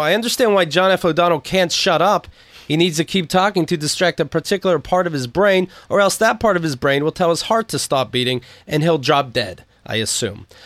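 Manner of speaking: ordinary talk, nothing marked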